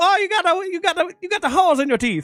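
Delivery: put-on very high pitched, heavy Italian accent. Imitating an old Italian dentist who sounded like Super Mario. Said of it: "he kind of was like a Super Mario".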